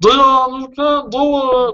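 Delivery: terrible, very high, slow cartoon voice. Showing how to change that inner voice that says you can't: cartoon voice. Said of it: "you can change it to a cartoon voice".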